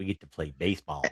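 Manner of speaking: low, soft Southern drawl, leaning on "ball". Retelling a movie moment, quote Dennis Quaid's line in his southern drawl. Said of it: "you got to put that southern drawl in your voice".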